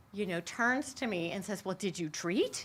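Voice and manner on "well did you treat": acted frantic, nervous, panicked and urgent. Retelling a question asked just before a live performance: imitating a panicked question. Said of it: "in a panic".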